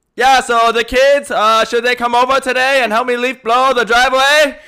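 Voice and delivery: very high, very loud, shrill motherly voice. Speaker warns listeners, then demonstrates their mom's normal voice: very loud imitation of mom. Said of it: "I'm going to be really loud because I'm going to be imitating my mom".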